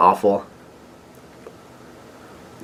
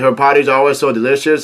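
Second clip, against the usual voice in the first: normal talking voice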